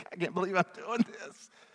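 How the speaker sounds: high, fast, laughing tone of disbelief.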